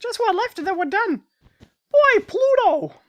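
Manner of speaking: shrill, loud, high little cartoon squeak. Finishing a wool project, breaking into a Mickey Mouse impression. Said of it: "I used to be able to do a really good Mickey Mouse impression".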